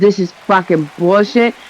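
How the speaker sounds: genuinely fed-up, pissed-off outburst. Retelling getting stuck in traffic: imitating own angry outburst. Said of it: "I fucking got pissed".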